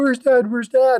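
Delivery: high, mock sobbing little voice. Telling a stork joke, voicing the baby stork: imitating a crying baby stork. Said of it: "the son was crying because he's".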